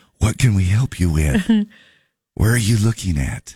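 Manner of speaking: library-desk librarian manner. Talking about librarian relatives, showing how to speak in a quiet library voice. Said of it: "you need to talk in a library voice".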